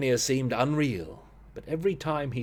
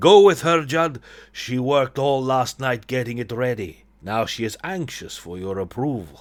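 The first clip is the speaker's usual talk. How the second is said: put-on loud, muddled, vague mix of Eastern European accents; 5 dB louder than usual. Voicing a character speaking to Judd, in a vague Eastern European accent. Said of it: "I don't know what accent I'm doing here".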